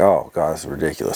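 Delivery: ordinary delivery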